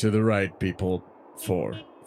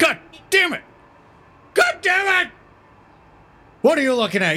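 very high-pitched, loud screaming; 6 dB louder than usual. Cursing at someone who is staring at them: screaming. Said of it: "Yeah, I'm screaming".

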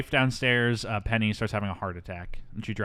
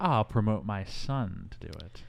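plain

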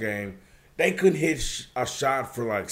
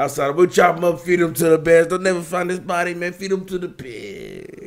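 loud, higher-pitched tough-guy Jersey mobster voice; 5 semitones higher, 6 dB louder than usual. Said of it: "Tony Soprano in the flesh over here".

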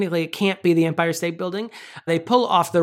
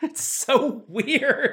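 ordinary talk, nothing marked

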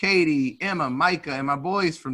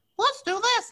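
awful put-on voice, very high and squeaky. Retelling what the birthday girl said when choosing a topic: terrible Katie impression. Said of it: "That's a terrible voice".

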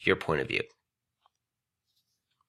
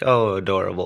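normal talking voice

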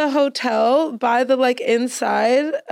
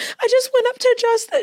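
put-on crying, tearful voice, higher pitch; 12 semitones higher than usual. Retelling a fan's call from a video: imitating someone crying. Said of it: "She was crying".

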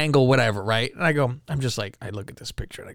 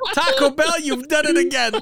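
put-on Jamaican accent, very high pitch; 12 semitones higher, 3 dB louder than usual. Showing the others how to do the compliment line: Jamaican accent. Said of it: "you have to do it in a Jamaican accent".

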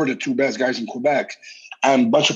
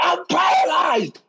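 put-on, very high, shrill, freaked-out panicked shriek. Speaker retells a fall and thinking they were paralyzed, retelling their own scream. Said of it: "I was screaming like this".

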